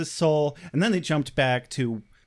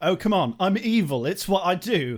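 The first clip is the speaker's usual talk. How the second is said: casual, put-on British accent; 4 semitones higher than usual. Speaker quotes Spike to the others, doing the Spike accent. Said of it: "never going to stop doing the Spike accent".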